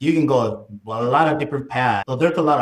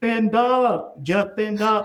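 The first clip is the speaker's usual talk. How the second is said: play-acted high, slow, drawn-out yell; 9 semitones higher than usual. Retelling his wife's answer from the shore: imitating his wife yelling. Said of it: "And she yelled".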